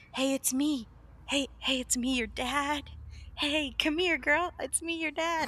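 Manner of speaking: wheedling, coaxing, luring voice. Retelling the Phantom calling to a girl at a graveyard: imitating the Phantom luring her. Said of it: "the Phantom's like".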